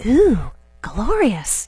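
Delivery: understated, low-key little ooh of delight, half to herself. Retelling what her daughter said at a clothing store: imitating someone saying it very quietly. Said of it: "said very quietly".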